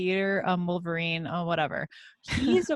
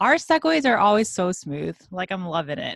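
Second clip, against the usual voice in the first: loud, swooping sarcasm, dry and plainly insincere; 6 dB louder than usual. Commenting on how smooth the segues are: sarcastic. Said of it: "was that sarcastic?".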